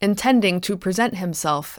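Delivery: ordinary delivery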